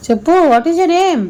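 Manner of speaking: high, loud angry shouting. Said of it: "కోపం వచ్చి అలా అరిచాను".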